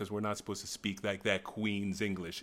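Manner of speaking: ordinary talk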